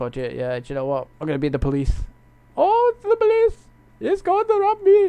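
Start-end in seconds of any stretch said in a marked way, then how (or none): 2.6-5.1 very high, loud squeaked exclamation. Quoting a sitcom scene about a bank robbery: Roy from The IT Crowd voice. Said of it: "Roy's like".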